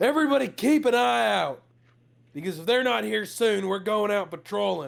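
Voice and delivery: high, rough, barked yelling. Voicing Holb ordering everyone to keep watch: yelling orders.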